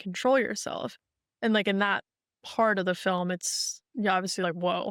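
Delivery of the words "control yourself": ordinary delivery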